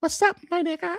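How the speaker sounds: sweet, cute, very high cutesy little voice. Retelling what a streamer said on stream: imitating a cute voice. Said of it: "Cute voice".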